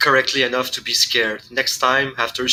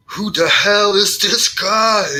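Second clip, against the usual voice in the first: high-pitched yelled shout; 8 semitones higher, 4 dB louder than usual. A player describes a character reacting during a shootout, shouting. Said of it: "Hector is shouting like".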